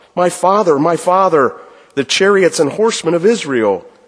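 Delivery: high, loud cry.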